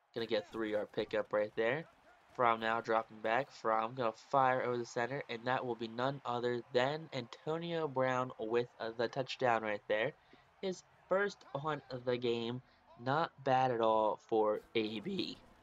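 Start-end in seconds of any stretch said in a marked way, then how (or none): 13.1-15.4 voice cracking, slower. Calling a touchdown while under the weather, voice cracking. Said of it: "Nice voice crack right there".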